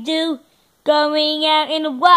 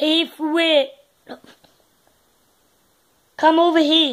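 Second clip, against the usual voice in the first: put-on Scottish accent. Doing accents one by one, now Scottish: Scottish accent. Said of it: "let's do Scottish".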